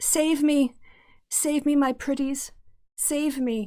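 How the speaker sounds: high, whiny, desperate screaming. A game master voices a woman upstairs who starts screaming for help. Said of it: "she starts screaming".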